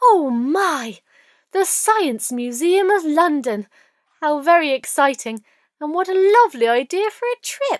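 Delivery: very excited, gushing. The narrator voices Miss Wimple, who is getting very excited. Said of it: "Miss Wimple was getting very excited by this point".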